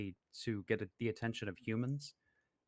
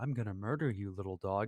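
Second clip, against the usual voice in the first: mock honeyed, affectionate, sugary sweet voice; 2 semitones lower than usual. Retelling a man talking to his dog, in a mock sweet voice. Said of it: "like in a sweet voice".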